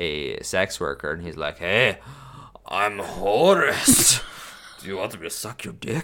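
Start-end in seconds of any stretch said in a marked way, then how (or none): 1.6-6.0 voice with a Scottish accent. Joking about a Scottish version of the god Horus: Scottish Horus voice. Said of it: "this Scottish Horus".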